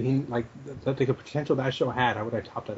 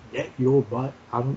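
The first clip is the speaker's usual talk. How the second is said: normal talking voice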